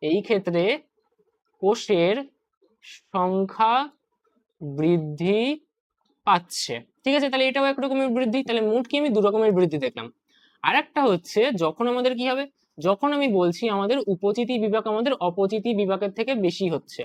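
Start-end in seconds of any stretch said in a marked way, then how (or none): 0.0-7.3 slow, each word set apart by pauses. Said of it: "তাহলে আমি কি বললাম?".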